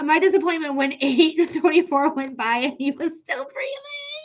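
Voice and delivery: speaking aloud through laughter.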